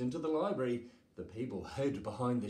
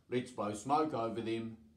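ordinary delivery

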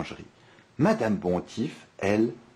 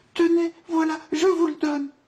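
very high, loud, stammering in terror; 5 dB louder than usual. Narrator reads the bakery owner answering the wolf, terrified stammering. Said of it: "terrorisée, bafouille".

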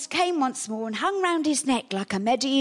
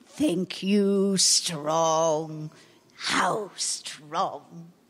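very low, very slow, broken-speech, menacing giant voice; 7 semitones lower than usual. A giant finds small intruders asleep in his cave; menacing giant voice.

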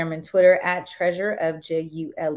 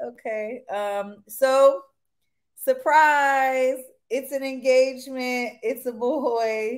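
teary, pitched-up voice; 6 semitones higher than usual. Announcing a surprise engagement and a baby boy to viewers, teary-eyed. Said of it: "I'm still teary-eyed".

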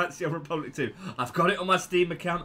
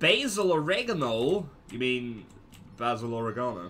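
teasing, put-on American accent; 4 semitones lower than usual. Teasing Americans over a misread character name: mock American accent. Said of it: "I'm winding up your accent again".

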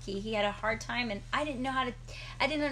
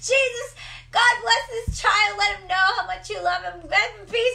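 very loud, shrill, full-volume yelling; 9 semitones higher, 11 dB louder than usual. A parent retelling praying over a screaming baby, acting out yelling a prayer. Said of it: "I'm just yelling".

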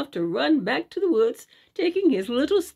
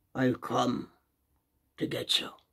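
hushed, whispered, low growl deep in the throat; 12 semitones lower, 7 dB quieter than usual. A bear comes right up to the car and speaks: growled low in the throat. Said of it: "growled the bear away down in his throat".

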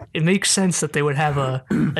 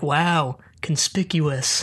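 put-on, very sarcastic, heavily laid-on delivery. Retelling a character's reaction after walking out: imitating a sarcastic remark. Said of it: "I don't know why I said it so sarcastically".

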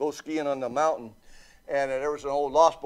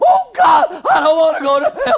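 very high, very loud, shrill howl of terror; 14 semitones higher, 13 dB louder than usual. Retelling how a man's brother ran down the aisle: retelling a terrified yell. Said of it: "he's yelling like that".

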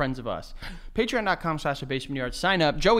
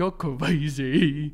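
mock deep baby-talk voice. A parent retelling the new baby talk they do with their daughter: deep baby-talk voice. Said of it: "I'll just like get like deep like that".

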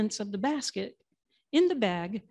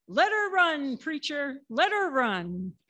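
mock enthusiastic yell, spirited and full of gusto; 4 semitones higher than usual. Retelling a sermon where a congregant yells back to the preacher again, imitating an enthusiastic yell. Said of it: "someone again yelled with gusto".

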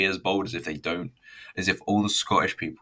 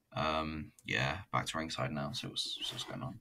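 usual speaking voice

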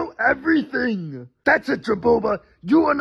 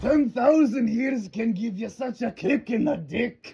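put-on Scottish brogue; 2 semitones lower, 3 dB quieter than usual. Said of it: "Why are you Scottish?".

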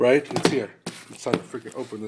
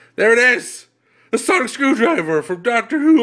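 high, loud, excited voice cracking; 12 semitones higher, 8 dB louder than usual. Unboxing a sonic screwdriver toy, the speaker's voice breaking. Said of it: "My voice is breaking".

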